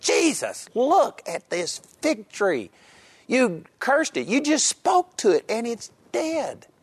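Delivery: put-on, very high, overwhelmed, disbelieving, shocked exclamation. Retelling a disciple's words about the cursed fig tree, acting out absolute shock. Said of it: "He was absolutely shocked".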